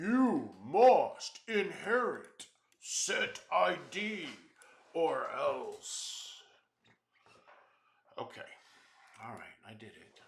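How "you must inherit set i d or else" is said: high, slow, loud, bossy demanding voice. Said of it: "patient saying".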